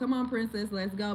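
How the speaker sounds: ordinary talk, nothing marked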